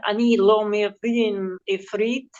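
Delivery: Hebrew spoken in a put-on Russian accent. Recalling people who spoke no Hebrew: imitating a Russian accent. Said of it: "in a real, um, Russian accent".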